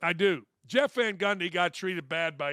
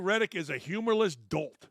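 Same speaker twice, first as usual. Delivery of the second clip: ordinary talk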